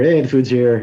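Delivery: ordinary talk, nothing marked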